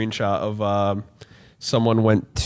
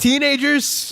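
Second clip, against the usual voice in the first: put-on robot sidekick voice, higher pitch. Retelling Alpha's doubtful reply to Zordon: imitating Alpha. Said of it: "and Alpha was like".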